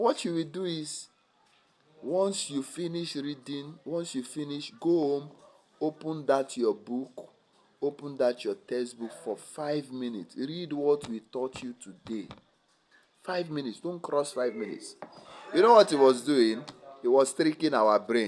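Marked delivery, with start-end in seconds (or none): 0.0-15.0 put-on soft-spoken Nigerian accent. Quoting the first teacher's study advice to the class, in a Nigerian accent. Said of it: "let me say it in Nigerian accent".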